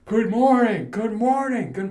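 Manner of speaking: acted, booming, loud, high-pitched, carrying voice. Speaker imitates a man greeting everyone as he walks into the building, loudly. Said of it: "You can hear him".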